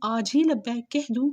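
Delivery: ordinary delivery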